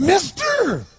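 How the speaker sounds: really bizarre, very high, loud voice. Retelling a man who begs the speaker for money, imitating a bizarre voice. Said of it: "He had this really bizarre-looking sounding voice".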